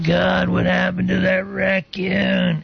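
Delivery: rasping, rough, creaky put-on character voice. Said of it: "going in his voice".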